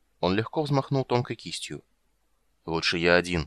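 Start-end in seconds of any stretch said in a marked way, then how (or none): 2.6-3.5 grumbling, slower. Narrator voicing Caramon answering Raistlin, grumbling. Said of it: "буркнул Карамон".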